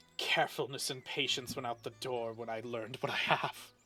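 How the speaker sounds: barely audible, hushed half-whispered mutter under the breath. Voicing a shop owner as the players leave: half-whispering. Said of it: "hear him whisper that".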